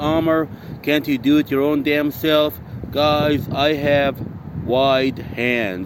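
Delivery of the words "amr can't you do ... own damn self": normal talking voice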